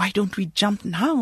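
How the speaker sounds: ordinary delivery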